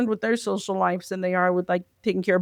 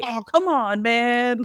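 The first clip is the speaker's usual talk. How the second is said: put-on casual teenager voice, higher; 4 semitones higher than usual. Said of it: "Nah, he's like".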